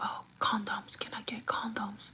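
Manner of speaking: hushed, very quiet, slow, drawn-out whisper. Store worker retelling what a customer asked; retelling a whisper. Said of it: "she whispers like".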